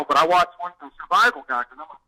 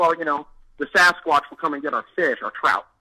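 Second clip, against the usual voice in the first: ordinary talk, nothing marked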